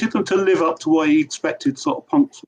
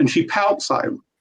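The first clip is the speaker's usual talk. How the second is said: ordinary talk, nothing marked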